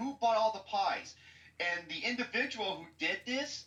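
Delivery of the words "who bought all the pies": furious, demanding, high, angry yell. Retelling how an angry mother reacted in line: imitating someone yelling. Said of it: "She was yelling".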